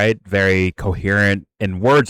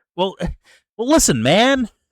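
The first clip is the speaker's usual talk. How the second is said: put-on stammering voice, higher; 12 semitones higher than usual. Showing how a public figure stammers when talking: stammering Hunter Biden impression. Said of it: "he stammers a bit, and he's like".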